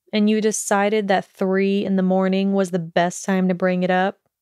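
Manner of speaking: plain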